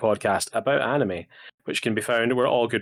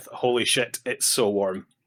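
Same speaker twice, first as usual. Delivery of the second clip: grumbled remark, half to oneself. Retelling what was just said to the other speaker: imitating muttering under breath. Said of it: "me uttering under my breath".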